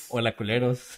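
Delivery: computer text-to-speech reading voice. Answering a viewer's request for a birthday greeting in Loquendo voice. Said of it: "pueden felicitarme con voz de loquendo".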